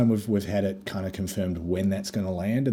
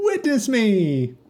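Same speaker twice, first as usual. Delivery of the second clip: very high, loud, bursting upbeat shout; 14 semitones higher, 7 dB louder than usual. Quoting a favorite clip line: upbeat quoted shout. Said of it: "Just the most upbeat voice".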